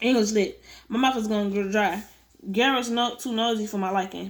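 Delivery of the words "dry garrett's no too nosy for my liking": plain reading voice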